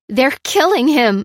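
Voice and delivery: high, loud voice breaking, cracking. Narrator reading a woman's reply as she demands a man's release, voice cracking. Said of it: "she said with a crack in her voice".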